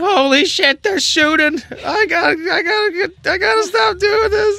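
character voice, screaming. Voicing Gerald, who cowers behind seats as shots ring out: Gerald screaming. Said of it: "Gerald's screaming".

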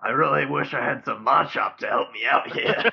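rough-edged, creaky, gruff coal miner voice. Imagining a miner who lives in Orberg, speaking as him: coal miner character voice. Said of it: "Do I sound like that now".

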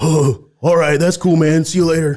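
put-on easygoing stoner voice. Retelling a delivery, the speaker quotes the man's reply, imitating a stoned guy. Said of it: "he's high as hell".

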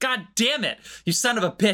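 put-on comic yell, high shouted outburst. Recounting a film scene where the helicopter pilot shouts at Dave Bautista; imitating someone shouting. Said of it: "she's shouting at him".

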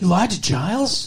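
appalled, scandalized, aggrieved, wronged tone. Retelling friends' reaction to a lie: imitating scandalized Willow and Xander. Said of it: "wronged and scandalized".

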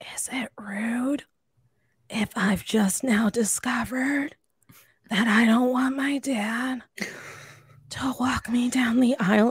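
whispered voice. Retelling a remark to a friend at a wedding: retelling a whisper. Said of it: "whispering to him".

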